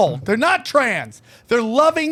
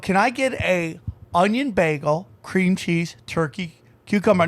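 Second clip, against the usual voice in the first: usual speaking voice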